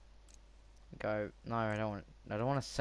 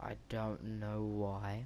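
very slow, drawn-out, trailing speech. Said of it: "I'm talking so slow".

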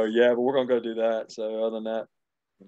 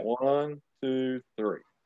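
counting at a slower pace; 2 semitones higher, 3 dB quieter than usual. Leading a group count again after a botched try, counting slower. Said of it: "Let me do it slower".

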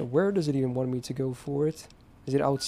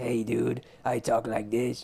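slow, rasping, drawling ghoul voice; 2 semitones lower than usual. The speaker retells how someone who thinks he's a ghoul talks: raspy ghoul voice. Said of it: "speaks with a raspy voice to mimic their way of talking".

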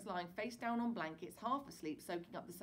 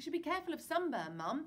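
kind, considerate, gentle voice, pitched up; 7 semitones higher, 3 dB louder than usual. Kneeling beside his dozing mother, he speaks to her kindly. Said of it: "Peter said kindly".

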